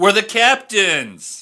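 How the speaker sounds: full-throated shout, very loud and high-pitched. Trying the line again when the other speaker asks: yelling. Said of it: "I should have yelled".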